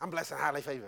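flat robotic drone, low and very quiet. Mocking people who answer 'how are you' with a stock phrase, imitating a robotic reply. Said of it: "Sound like a robot".

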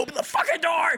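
very high, frantic, panicked shout. Retelling being stuck at a locked door while fleeing a ghost, retelling freaking out. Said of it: "I'm like freaking out and shit".

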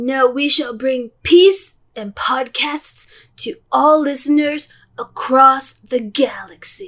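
fully committed surfer-dude voice. Continuing the podcast banter with a co-host, still in a Bill and Ted voice. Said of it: "I will not do that voice the whole time".

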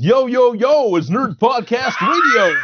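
shrill, very high, pumped-up hype-man voice. A co-host teasing the host about podcast greetings, mock hype intro. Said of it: "really glad you didn't do the whole".

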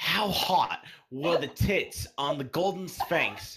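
botched Australian accent, loud and high. Reading a quiz question aloud in a bad australian accent. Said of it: "It's so far from Australian".

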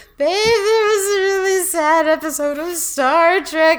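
high, tearful, weepy crying voice, words stretched. Retelling what was said to a waking partner, imitating own tearful voice. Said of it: "and I'm just crying, and I'm like".

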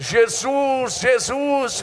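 put-on shrill, very high crying-out shout. Retelling how a man at a long prayer service cried out to jesus, retelling a shout. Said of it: "E ele começou a gritar".

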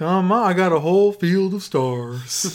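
acted drugged, drowsy voice. Acting out Phil's pitch to Daniel: sedated Phil impression. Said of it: "I don't know why he's talking this way".

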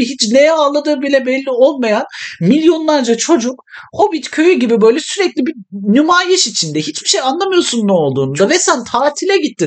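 flared-up ranting.

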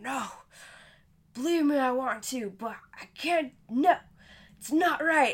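loud, sloppy put-on drunken slurred mumble. Retelling how a wasted friend talked to a girl, imitating drunken slurring. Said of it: "just slurring out".

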